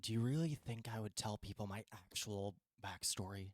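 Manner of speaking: hushed half-whisper under the breath, very soft. Replying to the other speaker's half-whispered remark, half-whispering. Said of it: "whispering back".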